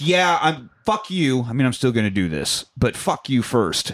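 ordinary delivery

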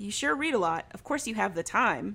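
normal talking voice

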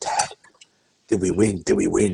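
put-on whispering voice. Retelling what Harvey whispered on waking Saturday morning: imitating Harvey whispering. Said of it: "he came to me and he whispered".

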